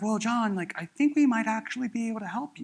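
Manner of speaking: weak, pathetic, unconvincing tone. Mimicking how an offer of help sounds on reviewed calls, mock-pathetic. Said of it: "it sounds extremely pathetic".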